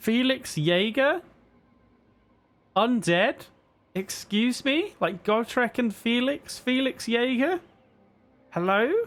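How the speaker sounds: very high-pitched, climbing, drawn-out voice. Reacting to felix jaeger being undead in the campaign: high-pitched voice. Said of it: "My voice is getting really high-pitched".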